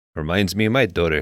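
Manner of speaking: said plainly and flat, with no emotion. Mocking an actor's unemotional line delivery: Charles Bronson impression. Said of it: "in a moment he's like".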